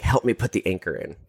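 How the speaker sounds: usual speaking voice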